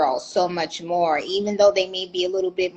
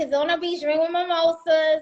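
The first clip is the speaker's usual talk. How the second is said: mock Puerto Rican Bronx accent, higher; 11 semitones higher than usual. Imitating the other speaker's earlier words: imitating a Puerto Rican Bronx accent. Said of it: "your Puerto Rican Bronx accent came out".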